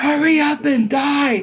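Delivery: mock slow, drawn-out woman's yell. Retelling a movie moment, imitating a friend's mom yelling. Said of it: "my friend's mom yelled out of nowhere".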